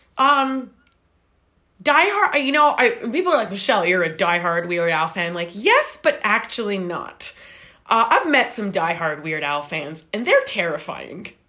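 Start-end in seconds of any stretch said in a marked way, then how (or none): none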